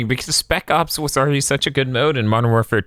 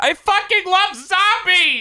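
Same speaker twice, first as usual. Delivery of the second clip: mock very high, stretched-out, drawn-out howl. Speaker pictures Rich Evans reacting to possibly no zombies mode; imitating Rich Evans screaming.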